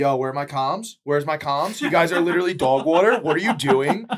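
screaming loudly.

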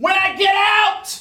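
piercing, shrill yell, very high. Into the mic, answering people who find him hiding away; yelling. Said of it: "You don't have to yell like".

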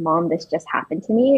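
ordinary talk

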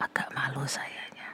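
soft, embarrassed whispered aside.

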